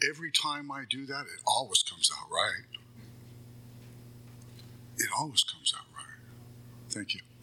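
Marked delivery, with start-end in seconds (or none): 0.1-6.2 emotional voice, catching and choking up. Speaker addresses the room about handling things the AA way: choking up. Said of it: "I'm choking up".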